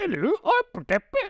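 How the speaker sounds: put-on weird, strange Scottish accent, very high. Mocking an actor's failed accent in a film: weird Scottish accent. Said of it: "do this kind of weird Scottish thing".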